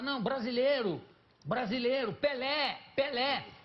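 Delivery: put-on high-pitched shout. Retelling how a photographer surrounded by a tribe cried out: imitating someone shouting. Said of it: "ele começou a gritar".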